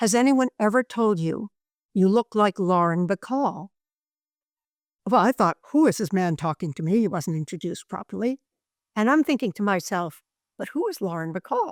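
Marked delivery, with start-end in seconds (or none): 0.0-3.7 low-key, courteous, gentle, mild delivery. Quoting a man beside the speaker on the bus, in a very soft voice. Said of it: "in a very soft voice".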